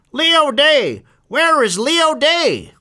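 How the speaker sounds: very high, very slow, drawn-out magpie squawk. Narrator reads a voice from the cattle truck calling for Leo Day, squawking magpie-like. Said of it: "a magpie-like voice squawking out his name".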